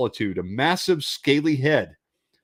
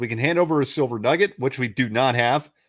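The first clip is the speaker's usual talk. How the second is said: ordinary delivery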